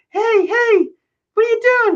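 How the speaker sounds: very high, squeaky voice pitched way up. Retelling the coach calling out to him on the curb, squeaky Joe Paterno voice. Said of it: "the squeaky voice".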